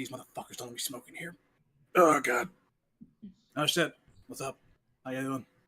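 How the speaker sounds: agitated, freaked-out character voice. Voicing a visitor at the door, kinda freaking out a little bit. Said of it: "you see Felix kinda freaking out a little bit".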